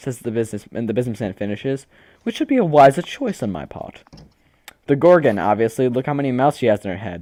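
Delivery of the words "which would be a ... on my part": gentle voice, higher. Voicing a businessman who shyly approaches a player: soft voice. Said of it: "he says in a soft voice".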